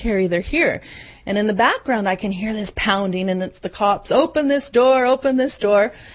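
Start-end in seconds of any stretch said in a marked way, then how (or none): 0.0-0.8 terrified, frightened voice. Retelling a mother's 1 a.m. phone call, imitating a terrified mom. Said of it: "the mom in a terrified voice says".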